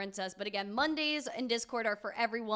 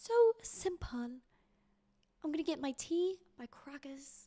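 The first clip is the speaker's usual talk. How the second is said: playful put-on British accent, pitched up; 5 semitones higher than usual. Speaker tries out their british accent for the channel: british accent. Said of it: "do my do my British accent".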